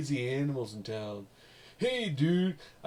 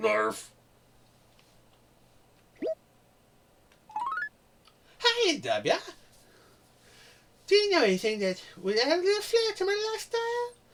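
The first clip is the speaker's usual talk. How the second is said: very high cartoon voice, swooping around. Reading a letter from a character named Pinky aloud: Pinky from Pinky and the Brain voice. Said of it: "try and do it like Pinky from Pinky and the Brain".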